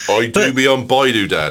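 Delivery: put-on Norfolk accent. A dad quoting his daughter's words to him: Norfolk accent. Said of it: "it sounds better in a Norfolk accent".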